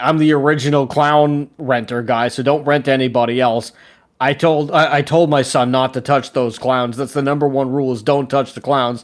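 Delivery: ordinary delivery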